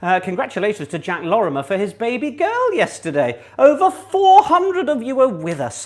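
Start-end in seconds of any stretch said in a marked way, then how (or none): 3.6-5.8 raised, pitched-up shout, calling out. Greeting listeners and reading out their messages, shouting. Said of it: "I'm shouting".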